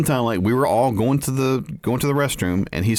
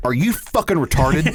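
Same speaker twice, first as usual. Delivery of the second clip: blunt outburst, called out directly; 3 semitones higher than usual. Retelling an insult blurted out in a silent room: retelling saying it loudly. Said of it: "because I said it loud enough for everybody to hear".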